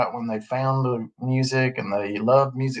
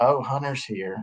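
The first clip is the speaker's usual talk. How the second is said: put-on sarcastic tone. Retelling what she said to people at a party, mock-sarcastic remark. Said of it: "in this sarcastic way".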